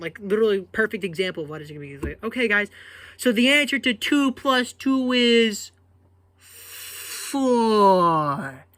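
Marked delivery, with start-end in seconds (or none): 2.2-8.5 put-on patronizing tone, very slow, spelled out, pitched up. Imitating how she asks and answers questions, mock-condescending, slow. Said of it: "the tone and diction of her voice just sounds so condescending".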